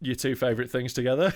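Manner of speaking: ordinary talk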